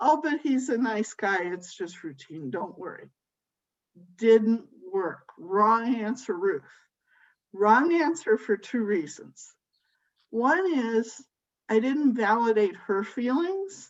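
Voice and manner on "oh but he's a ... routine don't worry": plain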